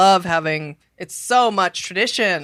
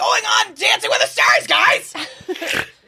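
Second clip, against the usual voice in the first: put-on yelling young girl voice, pitched higher; 14 semitones higher than usual. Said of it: "do you do a [name] impression".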